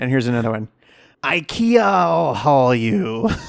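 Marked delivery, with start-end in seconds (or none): 1.2-3.3 hammy, put-on pirate captain voice. Telling jokes to listeners, in a pirate voice. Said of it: "I did a pirate voice".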